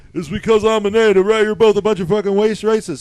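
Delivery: mock very shrill, very loud, furious outburst. Retelling a stranger's outburst on a train: imitating a man flipping out. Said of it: "And he flips out".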